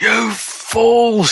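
shriek of pain, very high. Voicing a wounded sorcerer crying out in pain at the party: screaming in character. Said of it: "he screams".

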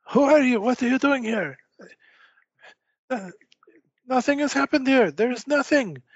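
very high, shrill, loud yell in character voice. Voicing Cherykov as he is discovered, yelling in character. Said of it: "yell out".

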